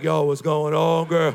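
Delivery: strained, very low, forced bass voice. Speaker retells greeting a woman he first met, trying for a deep bass voice. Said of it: "trying to have some depth, some bass".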